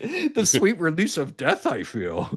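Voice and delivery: deliberately bad put-on voice, high and swooping. Joking around with friends, doing a bad Yoda impression. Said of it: "these are bad impressions".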